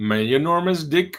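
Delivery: put-on Swedish accent. Explaining a reversed name by saying the phrase in a Swedish accent. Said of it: "it's My Enormous Dick in a Swedish accent".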